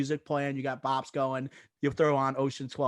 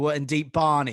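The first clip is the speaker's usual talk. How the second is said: loud, raised, belted delivery; 5 dB louder than usual. Retelling a favorite movie line: Don Cheadle impression. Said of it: "He goes like".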